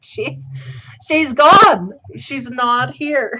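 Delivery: slow yelling. Explaining a tarot card about walking away, yelling. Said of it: "Sorry, I'm yelling".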